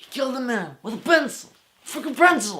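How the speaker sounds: weird, shrill, very high, loud exclamation. Quoting a movie line while talking about a game: John Wick impression. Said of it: "That was a really weird impression".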